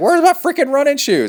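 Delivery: mock piercing, very high, shrill, exasperated yell. Retelling yelling at her while she was in the shower, own yell. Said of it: "And I'm yelling at her".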